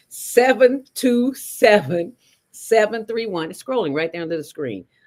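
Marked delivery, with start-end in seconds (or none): 0.1-3.5 very slow, raised, deliberate, careful spelling out. Host repeats the call-in phone number for viewers, speaking slowly. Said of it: "let me say it again and slow down".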